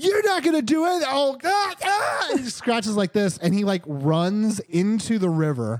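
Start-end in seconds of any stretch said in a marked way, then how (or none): 0.0-2.3 play-acted shrill yell, way up at the top. Recounting a game session, the speaker acts out a character retelling a yell. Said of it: "he's yelling and he's like".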